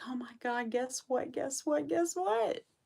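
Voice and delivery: mock excitement, very high-pitched, bursting. Acting out a woman who called all excited, imitating someone excited. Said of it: "she called me all excited".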